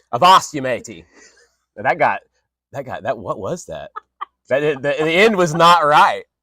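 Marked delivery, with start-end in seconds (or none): 0.1-1.0 put-on old sea-dog pirate accent. While drinking rum with friends, the speaker attempts a pirate voice.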